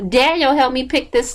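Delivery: put-on yelling woman's voice. Retelling how a woman yelled at her son, imitating her yelling. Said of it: "like yelling at her son".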